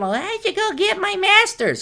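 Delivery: very high, rising, mocking put-on voice. Voicing women in their thirties and forties considering a master's, in a mocking high voice. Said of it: "kind of high voice there".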